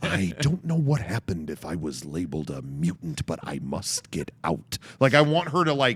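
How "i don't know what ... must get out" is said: put-on crazed voice, lower and quieter. Imagining an actress in an X-Men movie going crazy: acting crazed in character. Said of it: "she goes crazy and starts talking like".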